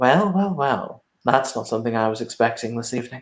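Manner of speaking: very polite, gracious, well-mannered, courteous voice. Voicing a stranger who appears behind a player in a forest clearing: very polite voice. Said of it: "a very, very polite voice say".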